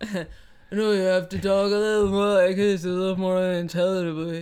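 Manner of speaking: low, dropped, heavy boxer-movie voice. Joking about Sly Stallone's speech: imitating Sylvester Stallone. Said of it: "that's not how he sounds".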